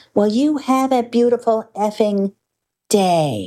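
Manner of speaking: loud, pointed, drawn-out retort. Retelling answering a driver who told them to f off: retelling saying it loudly. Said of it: "very loudly said to him".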